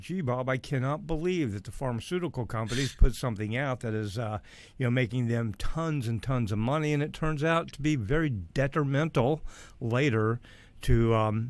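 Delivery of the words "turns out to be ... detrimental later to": normal talking voice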